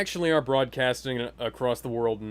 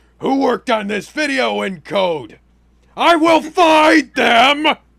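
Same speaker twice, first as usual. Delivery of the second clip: very loud, high-pitched, slow drawn-out yell; 13 semitones higher, 15 dB louder than usual. Demanding who made a badly rendered video: J. Jonah Jameson voice. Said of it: "I sound like J. Jonah Jameson".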